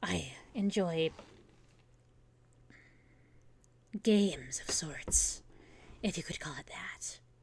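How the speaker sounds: throat-straining, very slow put-on character voice. A DM answers in character, in a strained put-on character voice. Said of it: "This voice is hurting my throat".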